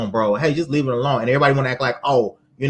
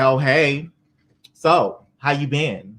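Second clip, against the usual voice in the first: mock very slow, taunting, trolling drawl. Imitating her taunting greeting to her ex on tour: mock trolling tone. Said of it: "she sounds like a fucking troll".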